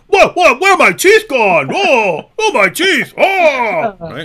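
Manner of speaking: put-on dumb braggart voice. Acting out the loudmouth idiot after a punch: mocking a loudmouth idiot. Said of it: "one of these idiots who goes around running his mouth".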